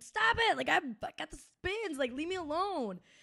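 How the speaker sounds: put-on drunk-sounding screaming voice.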